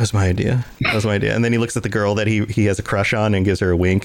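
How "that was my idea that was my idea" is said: whispered, lower pitch. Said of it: "whispers to his friend".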